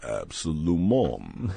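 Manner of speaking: French word said in a very low voice. Imitating Sly Stallone as if he did Rocky in French. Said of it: "Sly Stallone if he did Rocky in French".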